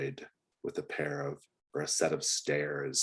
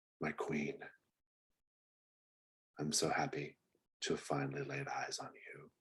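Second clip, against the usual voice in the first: quiet, mumbled muttering, half to oneself; 7 dB quieter than usual. Voicing a figure who descends dark stairs, heard in the darkness: muttering. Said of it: "you just hear him mutter in the darkness".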